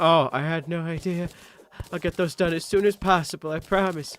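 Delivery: high, put-on sad, pitiful, helpless old lady voice. Retelling a woman's answer to a traffic cop; put-on sad old lady voice. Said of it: "she pulled the the I'm a sad old lady bit".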